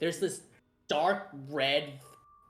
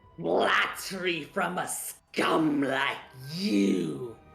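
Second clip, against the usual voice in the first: snarled character voice, louder; 2 semitones higher, 4 dB louder than usual. Voicing a hostile woman answering flattery: snarling character voice. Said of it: "she snarls again".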